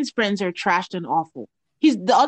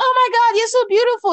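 put-on drunken slur, higher pitch; 14 semitones higher, 3 dB louder than usual. Retelling someone coming over with a compliment: imitating Trishelle slurring. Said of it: "And she was slurring".

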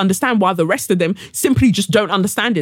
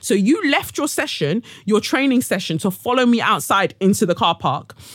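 ordinary talk

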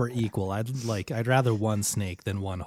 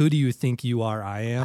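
plain

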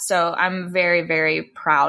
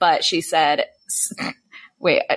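plain

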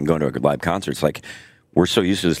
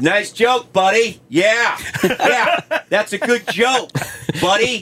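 very high, shrill, slow, drawn-out yell; 3 dB louder than usual. Retelling how a comic yelled at a joke thief: imitating a comic yelling. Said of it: "just yelling at him".

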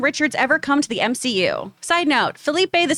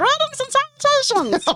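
chipmunk-style voice, much higher pitched; 11 semitones higher than usual. Reading a listener's message aloud, the reader says its greeting in a chipmunk voice. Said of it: "in chipmunk voice".

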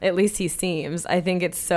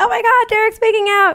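put-on, very high, loud, shrieking group scream; 6 dB louder than usual. Retelling the room watching the hot tub kiss: imitating people screaming. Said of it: "we're all screaming".

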